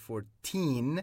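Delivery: put-on fourteen with stress on second syllable, -teen. Lesson contrasting fourteen and forty: stress on -teen of fourteen. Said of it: "14 میشه 14 استرس بر روی تی هست".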